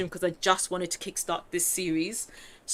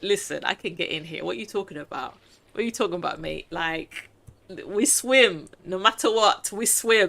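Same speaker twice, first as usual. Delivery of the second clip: ordinary talk, nothing marked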